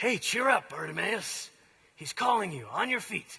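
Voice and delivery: rough, gruff, falsely friendly voice. Narrating the story of bartimaeus, the storyteller voices another character: rough fake-nice voice. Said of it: "that rough voice, pretending to be nice now".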